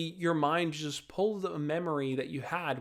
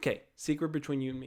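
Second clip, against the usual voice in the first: normal talking voice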